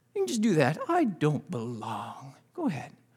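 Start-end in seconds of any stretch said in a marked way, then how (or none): 0.8-2.3 very low, pitiful, pathetic, sad moping tone. Speaker demonstrates a line for an audience using hand puppets; saddest, most pathetic voice. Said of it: "saddest, most pathetic voice you can".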